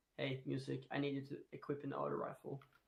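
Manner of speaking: usual speaking voice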